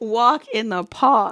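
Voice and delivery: loud, slow Boston or New York accent. Repeating a phrase during a card reading, Boston or New York accent. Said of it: "What type of accent is that?".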